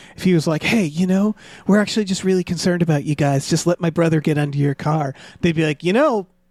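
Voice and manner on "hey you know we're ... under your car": mock-sincere hypnotizing, sensitive good-guy voice. Imagining a man persuading customers to let his brother near their car, mock-sincere hypnotizing voice. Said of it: "can make this voice that hypnotizes everybody".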